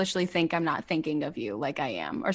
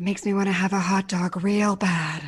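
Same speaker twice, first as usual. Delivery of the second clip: put-on breathy celebrity voice, louder; 2 semitones higher, 4 dB louder than usual. Asked for a good impression, doing Jennifer Coolidge: Jennifer Coolidge impression. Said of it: "Jennifer Coolidge".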